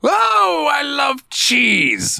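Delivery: very high character voice, pitch swooping wildly. Talking about a game's characters, the speaker does a Sheogorath impression. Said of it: "Like that guy".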